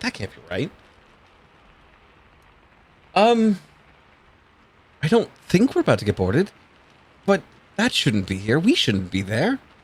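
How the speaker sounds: puzzled, confused muttering under the breath. Voicing a sailor puzzled by a ship: mumbling to herself. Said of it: "she kinda mumbles to herself".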